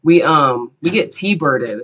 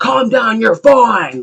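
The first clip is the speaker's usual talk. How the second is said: mock angry, brusque telling-off tone; 7 semitones higher, 3 dB louder than usual. Retelling what a bystander said after a car crash: imitating an angry man. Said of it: "all angry at me".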